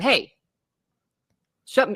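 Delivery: put-on, firm, no-nonsense stern tone. Retelling her husband's words to show it wasn't a yell: imitating a stern warning. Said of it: "just a stern".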